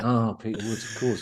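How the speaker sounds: knowing, of-course tone, as if obvious. Imitating quiz contestants who pretend to know the answer: imitating a contestant's knowing tone. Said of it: "you just do it in that tone".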